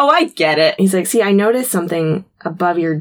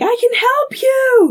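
mock very high, slow, drawn-out pleading yell. Retelling a scene where a trapped character yells: imitating someone yelling. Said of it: "we hear him yelling".

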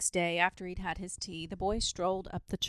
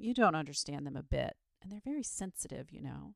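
plain reading voice

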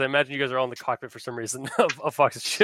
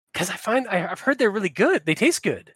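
little, small voice, much higher; 6 semitones higher than usual. A character answers another's question, in a little voice. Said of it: "Says a little voice".

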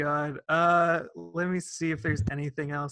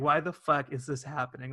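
normal talking voice

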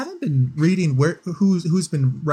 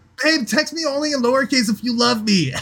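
pitched-up California surfer-dude beach voice; 6 semitones higher than usual. Speaker reads a sample response to an all-caps text, California beach dude voice. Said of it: "It was like California beach dude".

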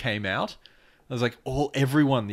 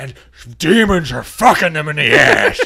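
mock crazy old man ranting, higher and louder; 3 semitones higher, 12 dB louder than usual. Retelling a radio interview, imitating a crazy old man ranting. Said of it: "crazy old guy who's on a radio show".

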